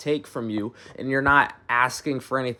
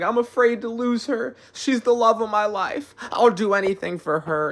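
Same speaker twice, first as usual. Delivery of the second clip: very high-pitched, meek, devoted, submissive voice; 9 semitones higher than usual. Acting out a man dominated by his partner: imitating a submissive man. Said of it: "The man's like".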